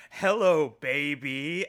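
put-on loud call-out, the word "baby" stretched long. Retelling a wrestling promo line as if quoting Austin Powers: imitating Michael Hayes doing Austin Powers. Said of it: "as if he thought that that was the quote from Austin Powers".

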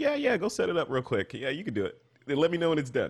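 collected, easy, matter-of-fact, no-big-deal tone, sing-song. Imitating Jim casually handing off a hard task: Jim's calm, matter-of-fact voice. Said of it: "very calm, collected, and matter of fact".

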